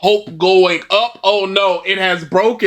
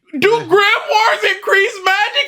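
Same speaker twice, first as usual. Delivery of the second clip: mock screaming, higher pitch. Mocking a video essayist's question about grimoires: imitating someone screaming. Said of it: "just screaming".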